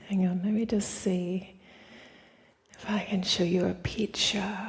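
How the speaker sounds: slightly whispered, soft. Showing a picture while everyone else is in bed, whispering a bit. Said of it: "I'm whispering a bit because everyone else is in bed".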